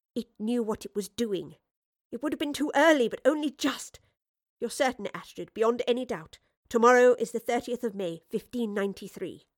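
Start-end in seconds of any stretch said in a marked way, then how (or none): none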